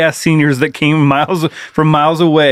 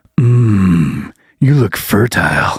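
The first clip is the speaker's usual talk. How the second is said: put-on low, slow, creepy old man voice. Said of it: "Father Time decided to grace my presence with this".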